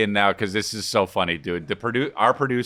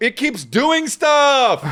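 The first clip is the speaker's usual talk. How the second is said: very high, slow, blood-curdling furious outburst; 13 semitones higher, 4 dB louder than usual. Imitating a friend who keeps fighting a computer program: imitating someone furious. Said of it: "he's blood curdling mad".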